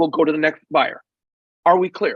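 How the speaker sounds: ordinary delivery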